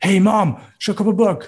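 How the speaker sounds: loud, high-pitched, aggressive, forceful outburst. Comparing how languages sound, imitating loud Bosnian or Albanian speech: loud, mock-aggressive. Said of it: "wo jemand lauter redet und sagt, ... das war jetzt ein bisschen aggressiv".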